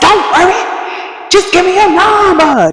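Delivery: very high, insistent, drawn-out yelling. Retelling a loud man asking for her number: imitating a man yelling. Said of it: "just yelling".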